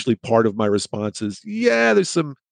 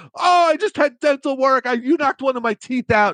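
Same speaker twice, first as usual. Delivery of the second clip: very high-pitched, staged, pained wailing scream. Retelling a staged door accident in public, mimicking Bill's staged screaming. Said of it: "he'd start screaming".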